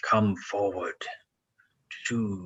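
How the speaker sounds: dragon voice hissing out the words. A game narrator voices a dragon speaking to a player: hissing dragon voice. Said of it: "he hisses at you again".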